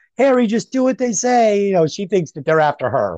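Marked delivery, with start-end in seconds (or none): 0.2-1.7 mock very high, shrieked screaming. Retelling a film scene where she is abducted: imitating someone screaming. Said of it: "And she's screaming".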